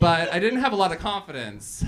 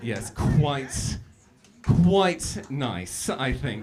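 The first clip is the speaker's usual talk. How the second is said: slow, fake, put-on British accent; 4 semitones lower than usual. Showing the accent once used to fool someone, put-on British accent. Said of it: "I can do the British accent. Um, so it was basically something a little along the lines of this".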